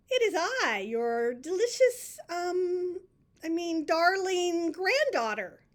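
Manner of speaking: high, loud wolf voice, slow and deliberate. Reading a story aloud, the wolf answering Granny at her door: wolf in a high voice. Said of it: "said the wolf in a high voice".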